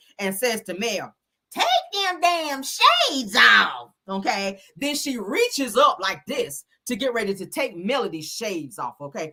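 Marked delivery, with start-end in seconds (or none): 1.5-3.9 grating, squeaky, swooping, loud, annoying voice. Retelling a scene where Tisha demands shades off: imitating squeaky annoying voice. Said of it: "with that squeaky, annoying voice".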